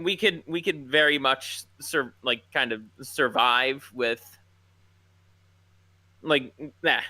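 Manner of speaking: stammering, tripping over and repeating words. Speaker trying to make a point and losing the words, stammering. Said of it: "I'm kind of stammering on my words here".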